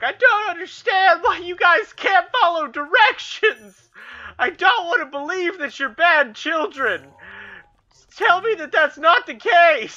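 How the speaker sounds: mock very high, tearful sobbing. Retelling a teacher's breakdown in front of the class: imitating a sobbing teacher. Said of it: "she's just bawling her eyes out, crying".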